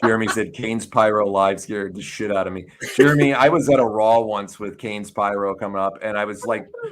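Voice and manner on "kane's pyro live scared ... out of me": ordinary talk, nothing marked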